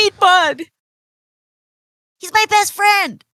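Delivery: high, loud tearful voice.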